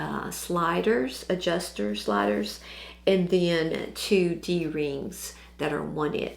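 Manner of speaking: slow, scratchy, hoarse near-whisper.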